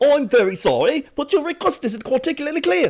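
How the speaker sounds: put-on very high, loud, polite British accent. Imitating how she suddenly starts speaking, in a British accent. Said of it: "She just starts speaking in a British accent".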